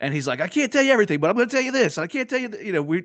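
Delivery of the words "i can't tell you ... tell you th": excited, worked-up, very high-pitched, teasing voice. Retelling how Apache talked about the movie: imitating Apache excitedly. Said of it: "he got so animated, he got so excited".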